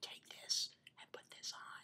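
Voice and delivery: barely audible, very quiet hushed whisper. Retelling how someone handed over a cream: imitating someone whispering. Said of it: "said it in a whisper".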